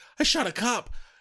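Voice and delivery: high, loud panicked blurt of disbelief. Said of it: "George is like".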